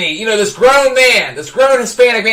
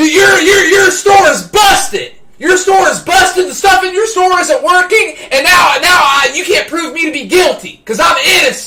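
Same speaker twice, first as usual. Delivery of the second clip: mock heated yell, high and dead serious; 7 semitones higher than usual. Retelling accusing a store manager of a broken system: retelling own yelling. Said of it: "Now I'm yelling at the store manager".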